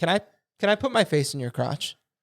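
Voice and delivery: put-on talking-dog voice. Retelling a visit to a buddy's place, voicing a dog. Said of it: "and he's like".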